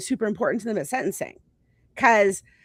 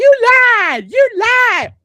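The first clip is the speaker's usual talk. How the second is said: booming, shrill, high-pitched, drawn-out yell; 12 semitones higher, 11 dB louder than usual. Retelling how a shooter's family members yelled after the sentencing: imitating family members yelling. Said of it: "his family members are yelling at me".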